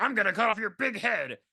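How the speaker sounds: put-on grandma voice. Retelling a story, the speaker quotes Granny exactly: Granny's voice. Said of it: "this is Granny's voice".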